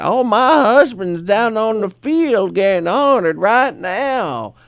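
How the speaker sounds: put-on high, slow, stretched elderly woman voice. Speaker retells what an old man's wife said to him, imitating an old woman. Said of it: "That's the way she sounded".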